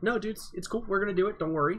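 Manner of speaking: put-on cool, collected tone. Describing a player who stays positive when others insult him: imitating Day9 staying calm. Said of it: "totally cool, calm, and collected".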